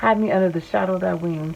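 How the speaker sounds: ordinary talk, nothing marked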